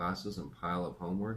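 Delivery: ordinary delivery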